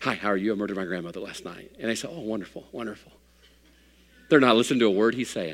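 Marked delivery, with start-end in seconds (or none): 0.0-1.7 mock mutter, much lower and quieter. Telling a story about a man in a receiving line, retelling his under-breath mutter. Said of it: "he just says under his breath".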